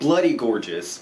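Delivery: bloody stressed with a wide pitch swoop.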